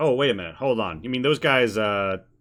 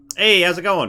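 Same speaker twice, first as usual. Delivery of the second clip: bright, perky, chipper, high raised voice; 7 semitones higher, 6 dB louder than usual. Describing what the listeners hear, the storyteller voices a character in a chipper voice. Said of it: "a chipper voice go".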